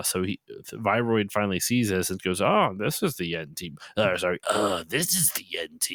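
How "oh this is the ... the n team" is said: put-on evil, maniacal villain voice. Retelling what the villain says on seeing the team: imitating an evil, maniacal villain. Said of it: "or whatever his voice is".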